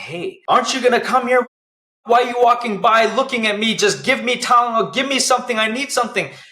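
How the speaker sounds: very high, loud, shrill, acted furious angry screaming. Retelling their past self shaking the bed, yelling at people walking by; retelling angry yelling. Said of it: "yelling and screaming at everybody walking by".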